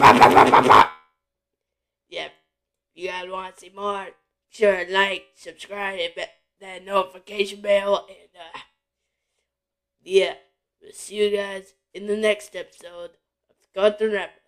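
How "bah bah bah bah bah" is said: low, loud, mocking bah-bah growl. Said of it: "He go like".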